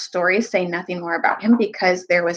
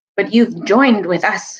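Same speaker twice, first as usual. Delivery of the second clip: ordinary delivery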